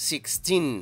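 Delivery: put-on sixteen with the teen syllable stressed. Lesson in Spanish on English number stress, stress on teen in sixteen. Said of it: "Recuerda la sílaba tónica en el teen".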